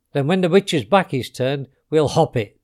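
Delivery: plain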